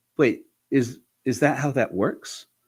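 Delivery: ordinary talk, nothing marked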